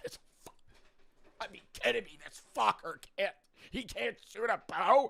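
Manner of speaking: play-acted, exasperated, frustrated cursing rant. Imagining being stuck with a teammate who can't shoot: pretend frustrated cursing. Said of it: "I'd be cursing in that box".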